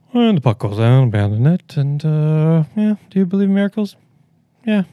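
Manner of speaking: put-on indifferent voice. Retelling a famous sports call redone as Ron Burgundy: imitating Ron Burgundy's bored voice. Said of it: "a boring, I don't give a crap voice".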